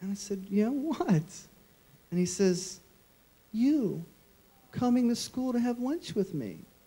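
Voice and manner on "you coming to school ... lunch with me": put-on innocent five-year-old child voice. A father retells what his son Jack said to him, in an innocent five-year-old voice. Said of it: "in that perfect, innocent five-year-old voice".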